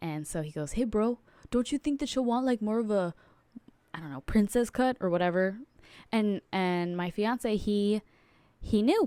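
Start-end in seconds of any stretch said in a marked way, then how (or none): 0.7-3.1 fast, rattled-off, put-on Romanian accent. Retelling a man's ring advice to the speaker's fiancé, imitating a romanian accent. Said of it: "he kind of talks like that".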